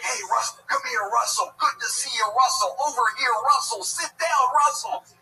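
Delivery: put-on overeager shout, very high, very loud, shrill. Retelling how a guy keeps using the wrong name: imitating an excited guy. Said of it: "and he's always excited".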